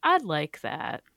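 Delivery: calm, lovely, pleasant voice. Imitating Martha's line at the end of the movie: Martha's calm, lovely voice. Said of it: "sort of calm, lovely voice".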